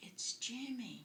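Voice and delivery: tiny, high little voice. Retelling a pastor's phone call, the speaker does Jimmy's tiny little voice. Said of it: "the little voice said".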